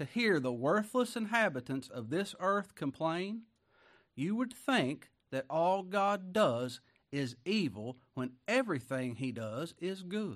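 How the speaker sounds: slow, deliberate delivery, each word drawn out with weight. Repeating an old writer's quote a second time for listeners, said slower. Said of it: "I'll say it slower".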